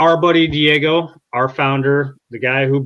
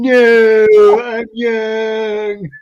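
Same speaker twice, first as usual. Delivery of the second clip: loud, high protesting tone, drawn-out "no"; 8 semitones higher, 5 dB louder than usual. Repeating a friend's joke line in a Kevin Hart voice. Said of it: "I hear that in a Kevin Hart voice".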